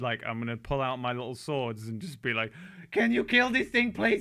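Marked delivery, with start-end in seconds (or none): 2.9-4.2 very high, loud, tearful wailing cry. Playing their character in a game, the speaker turns to another player, crying. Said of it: "and just cry".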